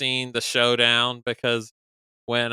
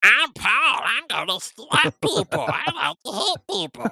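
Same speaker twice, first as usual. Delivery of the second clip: very high, slow childish sing-song, mocking, swooping and dragged; 13 semitones higher than usual. Mocking Paul the way kindergartners do impressions: kindergartner-style Paul impression. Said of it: "the impression that kindergartners do of people".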